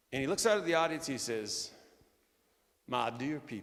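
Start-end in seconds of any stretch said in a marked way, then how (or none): 2.8-3.6 put-on slight Tennessee accent. Quoting John Maxwell's opening words to a quiet auditorium: slight Tennessee accent. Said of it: "a little bit of a Tennessee accent".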